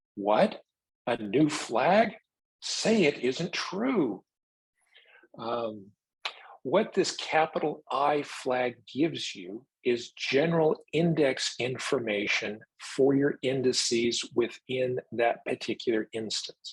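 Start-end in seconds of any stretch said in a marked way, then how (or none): 0.2-4.2 high, slow sarcastic mock disbelief. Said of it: "So I sarcastically say".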